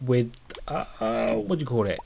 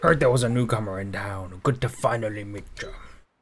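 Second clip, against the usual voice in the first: put-on old sea pirate voice, fully in character; 3 semitones lower than usual. The speaker voices a pirate greeting a newcomer in town; pirate character voice. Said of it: "I'm going to do it from this point forward".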